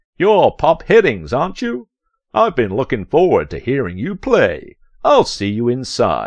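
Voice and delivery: very rich, velvety, silky smooth voice. Narrator reads Bongo's words to Pop on a red carpet: Bongo's smoothest, richest voice. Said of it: "said Bongo with the smoothest, richest voice imaginable".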